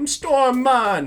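put-on loud, high-pitched Jamaican accent. Discussing Halle Berry's accent in the first film, imitate Storm's Jamaican accent. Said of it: "it seemed like she was doing a Jamaican accent".

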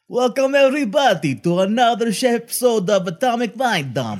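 attempted put-on Russian accent. Dared to try, he opens the episode in an attempted russian accent. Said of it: "I bet you can't even do a Russian accent".

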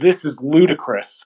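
plain

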